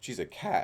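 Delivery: sudden voice crack in the middle of "cat". Explaining that saying the cat's name on the channel is fine: sudden voice crack. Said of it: "Crazy voice crack".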